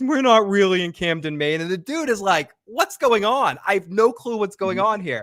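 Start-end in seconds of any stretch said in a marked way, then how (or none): 0.0-1.6 play-acted voice full of horror-movie dread. Recapping a movie scene, speaker acts out the actress's line, mock-horrified. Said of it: "the horror in her voice as she said that".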